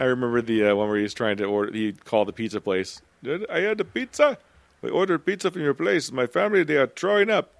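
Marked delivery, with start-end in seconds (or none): 3.2-7.4 very high-pitched put-on Indian accent. Retelling a prank call to a pizza place, in an indian accent. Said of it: "that did the uh, the Indian accent".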